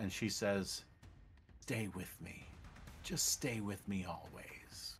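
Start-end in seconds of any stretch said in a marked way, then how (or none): 1.6-5.0 intimate, very hushed whisper, close against the ear. Voicing a monster whispering sweet nothings in his ear: whispering in his ear. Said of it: "She whispering in his ear".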